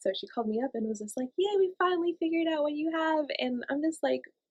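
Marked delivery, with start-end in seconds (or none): 1.4-3.3 mock cheerful, high, bright, always-positive upbeat delivery. Imitating the old rheumatologist calling the speaker up, put-on always-positive, happy tone. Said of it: "the way she makes things sound is like always so positive and happy".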